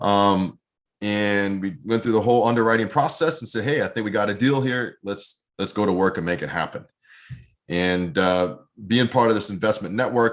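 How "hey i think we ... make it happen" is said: ordinary talk, nothing marked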